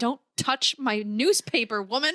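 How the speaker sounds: slow, put-upon, completely fed-up tone. Retelling a husband's retort to his wife: imitating a fed-up husband. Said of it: "he's so over it".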